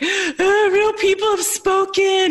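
very high, drawn-out sobbing through the words. Recalling the sold-out sign as her husband runs in, retelling sobbing. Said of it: "I literally start sobbing".

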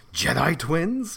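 high, sharp hiss of disbelief through the teeth. Reading a story aloud, voicing a character's question: hissing. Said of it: "He hissed".

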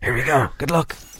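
soft, hushed half-whispering voice. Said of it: "Why are we whispering?".

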